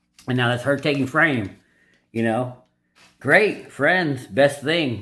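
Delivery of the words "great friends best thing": mildly sarcastic, dry put-on delivery. Retelling a movie scene, acting out his reply: mock sarcastic tone. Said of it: "He's kinda being a little sarcastic".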